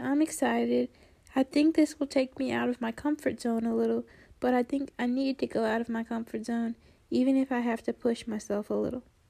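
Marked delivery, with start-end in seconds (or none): none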